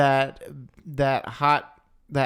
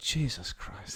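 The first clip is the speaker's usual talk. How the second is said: put-on mutter, much quieter; 2 semitones lower, 12 dB quieter than usual. Acting out a character's reaction to Anakin's line, imitating Obi-Wan muttering. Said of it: "hear Obi-Wan under his breath".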